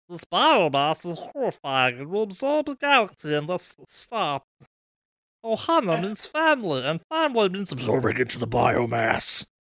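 wild, animated little alien voice with swinging pitch. Showing another speaker a Stitch impression: Stitch voice. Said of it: "I can do a Stitch".

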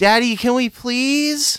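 put-on very high, drawn-out, childlike pleading. Voicing a daughter begging her dads for lights: pleading as a child. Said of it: "talk your dads into doing that".

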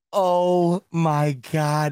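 talking through laughter. Reacting to an overtime play call, laughing while talking. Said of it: "I got tears in my eyes because I'm laughing".

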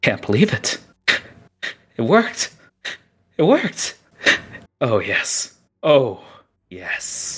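crazed, high, swooping maniacal laughter. A storyteller voices a character who finally sees the prize: maniacal laughing. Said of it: "Starts to give out a maniac laugh".

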